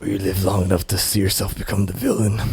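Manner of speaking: low, growling put-on voice. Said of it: "you sound like Gerard Butler".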